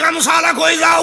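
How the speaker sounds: calling out.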